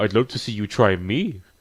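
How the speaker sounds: normal talking voice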